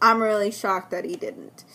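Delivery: ordinary delivery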